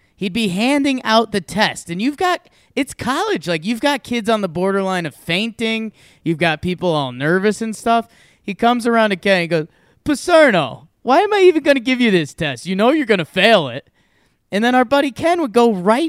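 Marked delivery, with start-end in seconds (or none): 10.0-13.9 put-on big, heavy Boston accent. Retelling how a college teacher handing out a test spoke to Ken, in a big Boston accent. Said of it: "Teacher had a big Boston accent".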